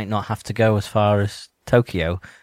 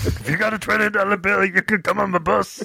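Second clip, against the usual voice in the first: very high, squeaky put-on voice; 11 semitones higher than usual. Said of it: "I bet [name]'s like that".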